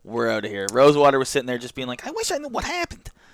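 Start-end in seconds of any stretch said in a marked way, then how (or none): 2.0-3.1 squeaky, very high-pitched voice. Imitating a game designer reacting to a leaked set: Rosewater impression. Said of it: "It's almost a Rosewater impression".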